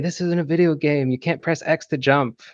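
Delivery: high, screamed drill-sergeant voice. Retelling what a drill sergeant said during training: imitating a drill sergeant screaming. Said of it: "drill sergeant screaming at me saying".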